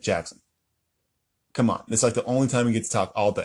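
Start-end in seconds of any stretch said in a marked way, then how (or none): none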